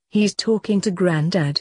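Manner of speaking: plain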